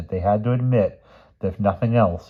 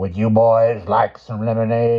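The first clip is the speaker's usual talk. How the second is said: really creepy, eerie, unsettling voice; 3 semitones higher, 4 dB louder than usual. She speaks to the visiting boys, in a really creepy voice. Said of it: "in a really creepy voice".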